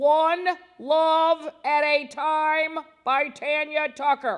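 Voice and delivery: booming, very loud, very slow, drawn-out dad voice. Impression of dad talking to the giggle machine: imitating dad, loud and slow. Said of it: "That's how loud he talks. And slowly".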